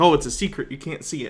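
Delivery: ordinary talk, nothing marked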